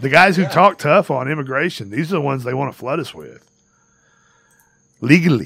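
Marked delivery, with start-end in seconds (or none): 5.0-5.5 loud, exaggerated politician inflection, leaning hard on words. Talking about tough-on-immigration politicians, one word in Donald Trump inflection. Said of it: "I say that with Trump's inflection".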